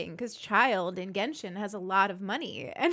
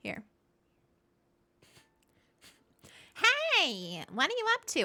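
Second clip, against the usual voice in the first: very high cartoon voice, "hey" stretched out long; 10 semitones higher than usual. Trying the voice again at a higher pitch for the others, Paimon voice. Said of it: "I can raise it again".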